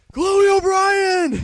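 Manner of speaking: high, slow, loud, drawn-out yell. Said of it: "he's yelling".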